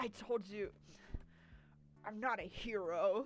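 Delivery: very slow, drawn-out, mocking anime voice. Mocking a game character's voice acting: mocking anime voice. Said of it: "His fuck-ass anime".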